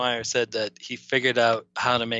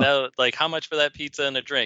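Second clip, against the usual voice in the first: ordinary talk, nothing marked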